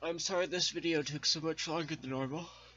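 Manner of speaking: very high, loud, stretched through a yawn. Video maker apologizes to viewers for a longer video; yawning while talking. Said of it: "sorry for yawning".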